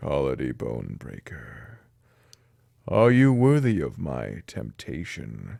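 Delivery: very low, deep, slow, rumbling demonic voice. Narrator reading a voice speaking to sleeping Cole, in a deep rumbling voice. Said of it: "Its deep tone reverberated".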